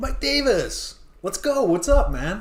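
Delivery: very high, slow, youthful voice. Retelling a head coach greeting a reporter mid-question: imitating Mike McDaniel's young-sounding voice. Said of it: "he talks like he's about, like, yeah, eighteen years old".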